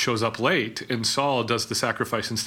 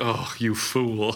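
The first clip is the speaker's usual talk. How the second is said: put-on grumpy voice. Telling Saul's story, the speaker acts out Samuel's reaction, mock-grumpy Samuel voice. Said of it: "Samuel with a grumpy face like".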